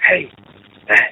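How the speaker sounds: very low forceful whisper-yell. Quoting a voicemail left on his phone, retelling a whisper-yell. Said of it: "whisper yelling into the phone".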